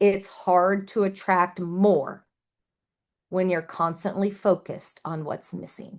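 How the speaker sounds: slow, deliberate, each word weighed and drawn out. Addressing an audience, a speaker stresses one line: said slowly. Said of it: "I'm going to say this this line slowly".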